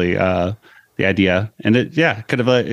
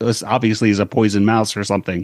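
ordinary talk, nothing marked

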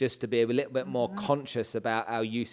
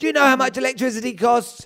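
mock huffing, exasperated grumbling, higher and louder; 13 semitones higher, 11 dB louder than usual. Retelling a father turning off light switches: imitating huffing, exasperated dad. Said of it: "my dad would walk around the house huffing and puffing".

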